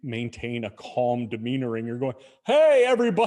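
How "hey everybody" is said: very loud, high shout. Recalling addressing people spread arm lengths apart, re-enact your own loud yell. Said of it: "I would have to speak very loudly".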